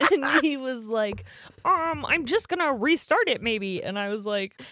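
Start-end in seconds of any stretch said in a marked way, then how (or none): 1.6-3.8 high cartoon frog puppet voice. Speaker retells what he said when something went wrong, in a put-on voice. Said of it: "They talk in those voices to each other all the time".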